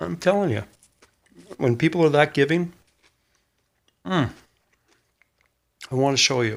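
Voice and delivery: speaking with mouth full of food. Thanking people for their generosity while eating, talking with mouth full. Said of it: "it's not rude to eat with your mouth full".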